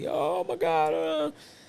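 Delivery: high crying voice, words pushed out through tears. Retelling a cousin at the hospital after a death, imitating someone crying. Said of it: "He's crying like".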